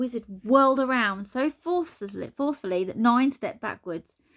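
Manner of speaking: usual speaking voice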